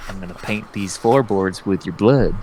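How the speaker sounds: put-on, acted, mock-menacing delivery. Planning the voices for a bit, the speaker acts out a mock-menacing threat. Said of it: "he's just gonna be like".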